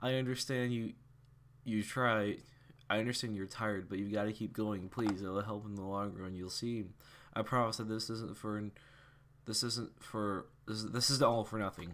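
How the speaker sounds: plain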